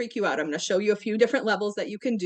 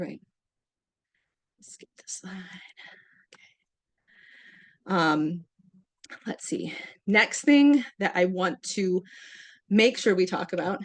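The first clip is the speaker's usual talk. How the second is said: out of breath, winded, catching breath; 2 semitones lower than usual. Presenting slides right after demonstrating an exercise, still out of breath. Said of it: "still catching my breath".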